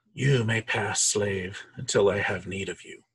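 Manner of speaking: eerie, hollow, echoing tomb-like voice. Voicing an ancient corpse answering an adventurer's request, in an echoing sepulchral voice. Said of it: "that this kind of weird echoing sepulcher voice echoes out of the mouth".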